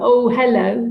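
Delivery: relaxed, light, good-natured, friendly tone. Retelling own greeting to an old fear: imitating saying it with a smile. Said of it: "I'd say it like that with a smile on my face".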